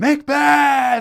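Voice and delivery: put-on yelling, very high and wild. Retelling how a disruptive woman in the theater started yelling: imitating someone yelling. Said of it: "She starts yelling".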